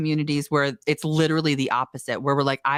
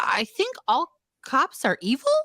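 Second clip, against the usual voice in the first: "evil" ending on a rising question tune; 9 semitones higher than usual. A parent quoting her nine-year-old daughter, imitating rising question intonation. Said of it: "she said it like going up like a question".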